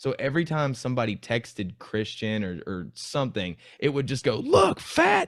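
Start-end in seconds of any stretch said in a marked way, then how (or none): 4.4-5.3 very high, loud shrieking scream. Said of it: "but he was screaming that".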